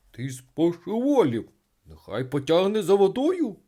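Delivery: loud, rising, alarmed, frightened cry. A narrator reads a friend warning the little water sprite; frightened exclamation. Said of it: "злякано вигукнув Ципрінус".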